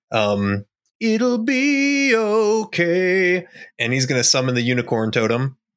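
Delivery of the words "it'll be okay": very high, swelling, swooping crescendo. Player's character Ebby braces to cast a spell during a fight: rising crescendo voice. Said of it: "says kind of in a crescendo of his voice".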